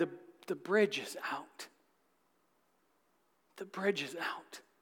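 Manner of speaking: hushed, soft, very quiet voice. Retelling a man answering the driver: acting out a soft reply. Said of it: "And the man softly replied".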